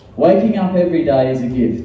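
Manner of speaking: plain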